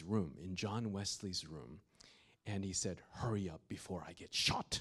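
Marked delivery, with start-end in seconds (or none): 3.1-4.8 put-on speaking in a British accent. Retelling what a man said while leading them into a room: imitating a British accent. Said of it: "in his British accent".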